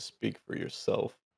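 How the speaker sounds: whispered, mumbled mutter under the breath. Voicing a character replying to the group: muttering under his breath. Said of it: "Kinda mutters it under his breath".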